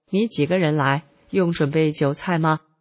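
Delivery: ordinary delivery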